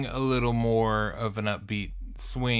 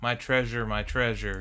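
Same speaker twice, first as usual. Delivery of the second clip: ordinary talk, nothing marked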